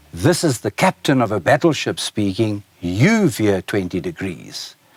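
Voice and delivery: normal talking voice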